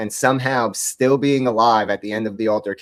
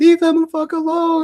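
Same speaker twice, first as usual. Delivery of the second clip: mock very high, shrill, shrieking scream. Retelling what protesters are heard yelling: imitating people screaming. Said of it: "You hear them screaming".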